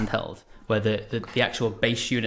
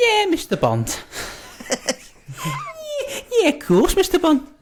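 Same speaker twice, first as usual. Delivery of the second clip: put-on Liverpool Scouse accent, very high and swooping; 8 dB louder than usual. Urged by the others to do a bond line, speaking in a scouse accent. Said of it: "best Scouse accent going?".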